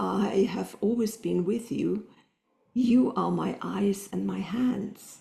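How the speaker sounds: put-on very soft, gentle voice. Retelling a phone call, the speaker quotes a woman, imitating a very soft voice. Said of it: "very soft voice".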